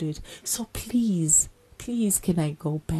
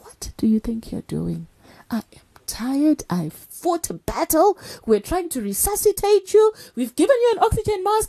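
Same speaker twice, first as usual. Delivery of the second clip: put-on scream, higher and louder; 11 semitones higher, 7 dB louder than usual. Retelling what the anesthetist said at the bedside: imitating the anesthetist screaming. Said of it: "And she kept screaming".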